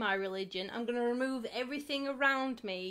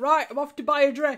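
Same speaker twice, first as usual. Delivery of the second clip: put-on very loud Yorkshire accent; 4 semitones higher, 12 dB louder than usual. Retelling a man who switched from eloquent Urdu to English, in a Yorkshire accent. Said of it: "came out with his Yorkshire accent".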